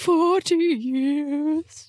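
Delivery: high mocking, parroting voice, "years" drawn out. Repeating another player's answer back at them, in a mocking voice. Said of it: "I will make that in a mocking voice".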